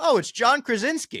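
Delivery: big carrying booming announcement, very loud and high. Retelling the moment the applause died down at a panel, in Trent's booming voice. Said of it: "Trent's booming voice goes".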